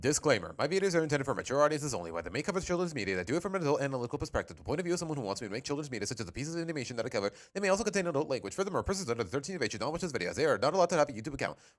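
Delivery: rapid-fire reading. Reading out a video disclaimer as quickly as possible: reading very fast. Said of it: "I tried to read that as quickly as I did last time".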